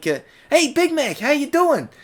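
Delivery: very high, youthful, younger-sounding character voice. Showing how a character's voice should sound instead, in a higher voice. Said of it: "it needs to be more like this".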